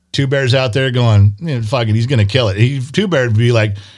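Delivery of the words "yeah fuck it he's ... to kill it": ordinary talk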